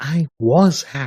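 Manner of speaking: ordinary delivery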